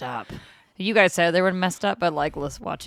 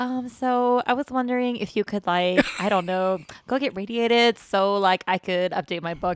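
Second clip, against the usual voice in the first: put-on California Valley girl voice; 3 semitones higher than usual. Picturing a game character asking a favor: Valley girl voice. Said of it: "this Valley girl like".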